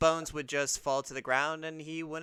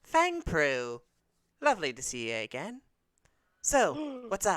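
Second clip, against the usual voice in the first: strange, swooping, made-up put-on cat voice; 2 semitones higher than usual. In an actual-play game, voicing a two-tailed cat greeting a party member: odd put-on cat voice.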